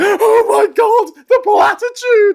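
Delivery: very slow, shrill, loud, adoring, worshipful gush. Mocking an entourage following a politician: imitating adoring followers. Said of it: "they're like".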